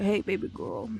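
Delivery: raspy, just-woke-up morning voice. Showing how raspy the voice gets: demonstrating a raspy voice. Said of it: "I also get raspy".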